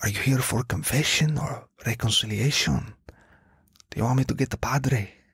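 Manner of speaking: put-on whisper. Retelling a janitor asking about confession: imitating a whisper. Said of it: "and he whispers".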